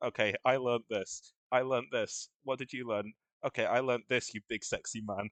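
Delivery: flat, expressionless delivery. Retelling a player's flirt-required line said in a flat voice: imitating Duke's flat normal voice. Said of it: "just in his perfectly normal voice".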